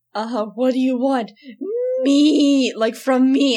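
loud, drawn-out screech. Retelling a scene where Steven screams at Lars: Steven screeching. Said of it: "and he's screeching it".

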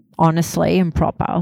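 normal talking voice

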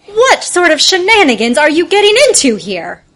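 full-on put-on voice, loud and swooping. Stepping into a doorway to address a group of boys, in a mom voice. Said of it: "I just have my mom voice on".

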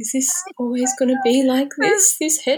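tiny, timid, very high little voice. Imitating a dad asking about the head shape, in a soft little voice. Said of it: "in this soft little voice saying".

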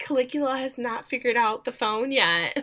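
put-on sad voice. Recapping a show scene and quoting Misty's reply: imitating Misty, sadly.

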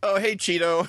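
put-on high, casual, unbothered little-girl voice. Retelling how the littlest child greets a doll while everyone panics: imitating a nonchalant little girl. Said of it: "the littlest child ju-, opens up and is like".

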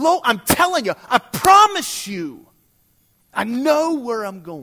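mock heated insistence. Retelling a lost driver insisting he knows the way: imitating an angry friend. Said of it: "he got kind of angry".

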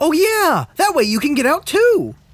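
very high, sudden, just-dawned realization. Agreeing with the other player's plan about the well, sudden realization. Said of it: "why do you sound like you just suddenly realized".

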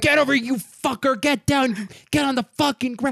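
acted, high-pitched screamed yelling. Retelling how a TV crew yelled at the bad guys: imitating someone screaming profanities. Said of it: "scream profanities at the bad guys".

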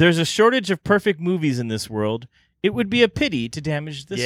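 ordinary delivery

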